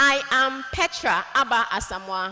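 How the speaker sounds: clear, confident, bold, loud and deliberate. Advice on introducing yourself, mentioning your name: bold, clear and confident. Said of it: "Mention your name with confidence".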